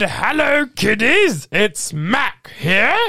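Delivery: high, slow, drawn-out cartoon truck voice. Retelling a video they posted, the speaker says the line in a Mac truck voice. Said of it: "I put on my Mac truck voice".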